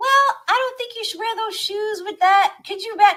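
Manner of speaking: put-on a very high-pitched voice like a little boy. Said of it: "he'd have a high voice".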